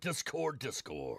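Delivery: deep, low, raspy rasping voice. Showing off what a nearly lost voice can do: deep raspy voice. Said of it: "that voice right there".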